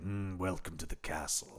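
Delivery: low, grand villain monologue voice. Retelling the villain's monologue in his castle: imitating the villain's monologue. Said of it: "He gets a few monologues in there where he's like".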